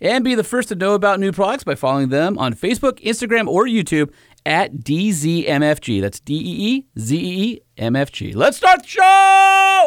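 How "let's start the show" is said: very high-pitched, loud, stretched yell. Kicking off the show after an ad read, yelling. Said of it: "Why are you yelling at me?".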